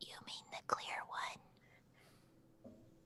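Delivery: barely voiced, very quiet, hushed whisper. Waiting for someone to arrive, asked about the data stick, whispering. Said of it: "Why are we whispering?".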